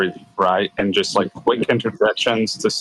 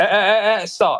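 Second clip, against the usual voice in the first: escalating cadence, rising as it builds; 12 semitones higher than usual. Showing how someone escalates their cadence to interject, escalating interrupting cadence. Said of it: "they like escalate their cadence".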